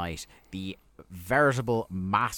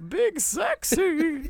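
squeaky, very high-pitched voice, shooting up; 4 dB louder than usual. Retelling a wrestler's list of names: imitating Ric Flair's very high-pitched voice. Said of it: "says "Big Sexy" in a very high-pitched voice".

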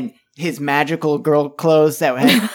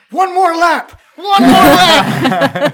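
very high, shrill, loud screaming; 13 semitones higher, 8 dB louder than usual. Dak screams back at the orc yelling about his ruined store, screaming. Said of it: "Dak screams back in Mandarin".

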